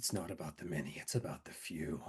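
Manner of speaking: barely audible, very quiet whisper under the breath. Voicing a dying character who whispers to himself: whispering to himself. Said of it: "He's just going to whisper to himself".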